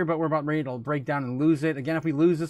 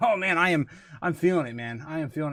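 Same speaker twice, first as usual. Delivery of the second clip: winded, catching breath between phrases. Speaker telling viewers he just finished and is feeling it, out of breath. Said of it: "I'm still out of breath".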